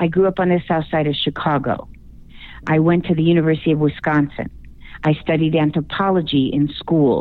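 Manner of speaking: pitch dropping low at the end of every sentence. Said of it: "put a downward inflection or a period at the end".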